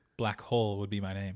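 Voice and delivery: ordinary talk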